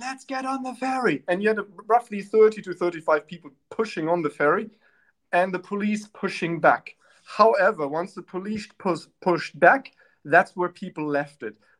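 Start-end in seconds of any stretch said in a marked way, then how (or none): 0.0-1.2 rabble-rousing rallying shout, pitched up. Retelling how rebel rousers at a ferry protest shouted: imitating someone shouting. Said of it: "rebel rousers shouting".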